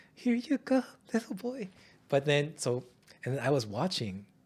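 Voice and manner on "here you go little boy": squeaky, very high-pitched, nervous, jittery voice. Retelling how handing over the cookie felt inside: imitating own nervous voice. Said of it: "But inside, I was like".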